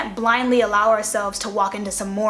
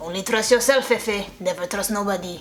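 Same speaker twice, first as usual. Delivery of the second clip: put-on Slavic-accented speech. Act out your father leaning over to give you advice, imitating Dad's Slavic accent. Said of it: "he would go in his Slavic accent".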